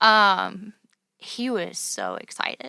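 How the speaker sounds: slow, tearful voice, fighting back tears. Talking about her late father-in-law, holding back tears. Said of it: "I'm gonna try to get through it without crying".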